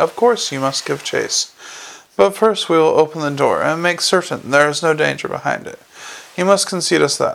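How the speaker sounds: plain reading voice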